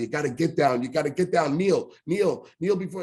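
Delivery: desperate, frantic, screaming, yelling voice. Retelling how a mother ordered him to kneel: imitating mother screaming. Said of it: "she's screaming at me".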